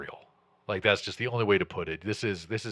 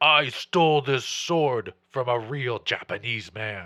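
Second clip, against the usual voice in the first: loud orc monster character voice; 3 semitones higher, 5 dB louder than usual. Narrating the showdown with the orc, the speaker voices the orc in an orc voice. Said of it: "he'll say".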